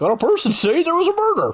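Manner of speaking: very high, goofy, silly cartoon character voice. Playing a character in a group roleplay scene, in a Goofy voice. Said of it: "I was trying to go for Goofy".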